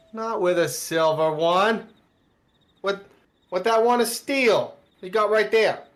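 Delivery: put-on loud, deliberate, drawn-out New Jersey accent. Voicing guards who question a sword: New Jersey accent. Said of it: "Why they sound like they're from Jersey?".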